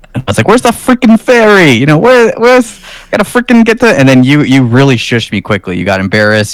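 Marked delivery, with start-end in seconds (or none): 0.4-3.8 very high-pitched put-on New York accent. Retelling doing the accent in a parking lot before a ferry: imitating a New York accent. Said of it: "I started doing the accent".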